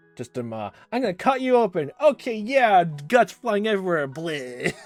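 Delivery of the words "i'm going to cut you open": put-on childlike innocent voice, much higher, louder, faster. Describing kids playing Doctor, acting out one child, in a childlike innocent voice. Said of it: "in a childlike, innocent kind sounding voice".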